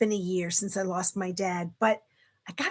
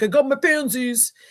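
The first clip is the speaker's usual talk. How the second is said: put-on Bronx New York accent; 3 semitones higher, 5 dB louder than usual. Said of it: "picture a Bronx, New York accent when he does it".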